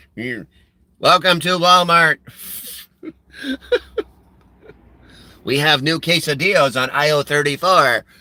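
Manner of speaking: mechanical, put-on robot voice. Imagining a robot greeting customers at Walmart: put-on robot voice. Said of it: "I can just imagine, like, this robot".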